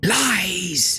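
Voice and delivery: high hiss, "lies" stretched long. Narrating the adventure, the clawed creature answers the player's claim: hissing. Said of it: "It hisses".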